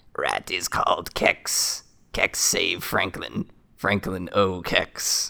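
slow, simple, broken-phrase rat creature speech. Treading water in the pipe, the rat turns and speaks to you: Kex the rat voice.

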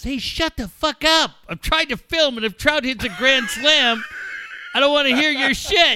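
play-acted, high-pitched yelling. Retelling telling sons to be quiet while filming: imitating own past yelling. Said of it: "you're yelling at us".

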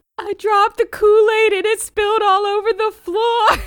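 mock, very high, loud sobbing through the words. Retelling a FaceTime call, doing his crying answer to 'why are you crying': imitating someone crying. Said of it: "why are you crying?".

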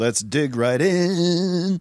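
slow, soft, drawn-out voice of mock relish.

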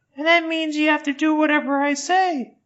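put-on very high, bossy, power-tripping nine-year-old voice. Imagining a power-tripping kid addressing his manservant: power-tripping nine-year-old voice. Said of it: "this power-tripping, like, 9-year-old being like".

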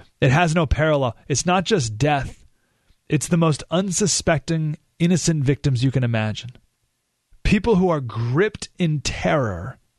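normal talking voice

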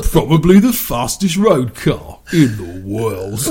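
British TV presenter voice, host-like delivery. Breaking off from a shooting report to do a Top Gear bit, Jeremy Clarkson impression. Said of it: "That's Jeremy Clarkson".

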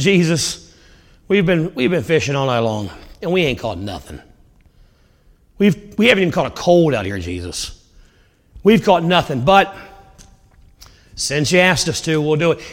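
grudging, swooping, sarcastic tone. Retelling Peter answering Jesus after fishing all night: imitating Peter's sarcastic reply. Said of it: "He kinda says it sarcastically".

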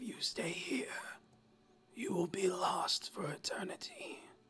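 strained, breathy whisper, decaying corpse voice. Narrator voices a figure speaking to the players, strained decaying-corpse voice. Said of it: "strained voice, as if air being pushed through a decaying body".

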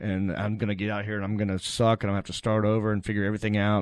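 ordinary talk

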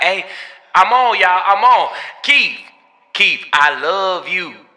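very slow, drawn-out, desperate voice. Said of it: "Be some desperate-ass forty-six-year-old".

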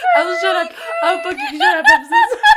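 laughing so hard it brings tears. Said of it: "I know why I'm crying".

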